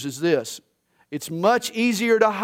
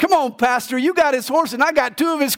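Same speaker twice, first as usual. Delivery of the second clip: mock hollering yell, high-pitched; 7 semitones higher than usual. Telling a hunting story, the speaker acts out the deacon yelling to the pastor. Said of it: "the deacon yells".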